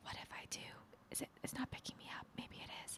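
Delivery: very soft, breathy whisper. Retelling what was said a minute ago about episode ideas: imitating own whisper. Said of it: "I started whispering, and I was like".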